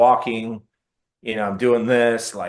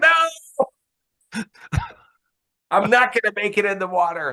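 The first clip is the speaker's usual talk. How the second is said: put-on laughing voice, very high-pitched; 10 semitones higher than usual. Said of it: "kinda laughing".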